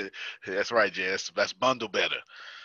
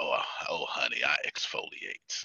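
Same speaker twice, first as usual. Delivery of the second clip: slow, deliberate, unhurried delivery, each word given time; 7 semitones lower, 5 dB quieter than usual. Saying a word the way Law would: imitating Law. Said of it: "you gotta say it like law".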